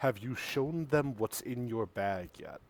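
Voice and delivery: very quiet, hushed half-whisper, close to ear. Narrator voicing a character leaning close to a player's ear: half-whisper. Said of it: "he whispers into your ear".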